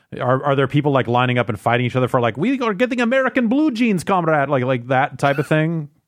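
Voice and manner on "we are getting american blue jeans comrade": put-on very high, jokey Canadian accent. Asking whether people line up for american items, in a joke canadian accent. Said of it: "That's my Canadian accent".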